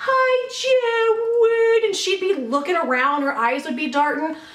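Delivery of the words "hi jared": put-on weird, very high, whiny baby voice. Jared recounts a woman suddenly calling out to him: whiny baby voice. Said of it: "in this really weird, whiny baby voice".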